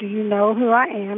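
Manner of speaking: ordinary talk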